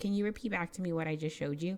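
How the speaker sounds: plain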